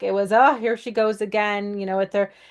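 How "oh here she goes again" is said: ordinary talk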